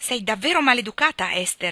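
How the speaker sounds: stern, sharp, snapping scolding tone. Mrs Hargrave, from her armchair, snaps at Esther: snapping. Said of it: "scattò la signora Hargrave".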